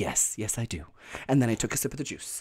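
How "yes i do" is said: calm voice, much quieter, slower. Speaker retells answering the juice man's question, retelling a calm reply. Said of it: "I said it calmly".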